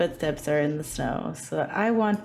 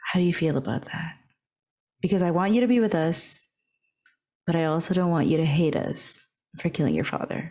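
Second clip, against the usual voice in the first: whispered speech. Speaking in character into another character's ear, worried about her father: whisper. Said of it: "I'm gonna whisper in her ear".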